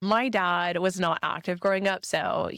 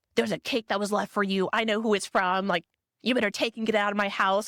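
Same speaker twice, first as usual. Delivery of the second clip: put-on angry cursing, furious ranting voice; 2 semitones higher than usual. Retelling a parent's reaction to a cake: imitating an angry cussing father. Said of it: "my dad just starts cussing".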